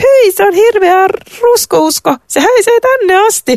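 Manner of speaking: shrill, loud, very high cry. A queen meets a classmate in the school corridor, exclaiming while holding her nose. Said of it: "Huudahti kuningatar Sofia nenäänsä pidellen".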